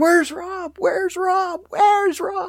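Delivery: play-acted, very high, frantic, panicked repeated screams. Speaker retells students charging in, searching for Rob; imitating panicked screaming. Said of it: "charging in, screaming".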